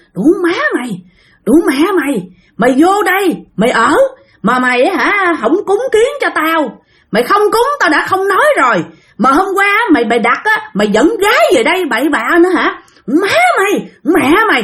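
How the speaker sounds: high, furious ghost woman voice.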